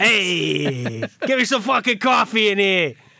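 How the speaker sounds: put-on New York Italian accent, stretched-out hey. Joking that the players are Italian now, the speaker does a New York Italian accent. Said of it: "New York Italian".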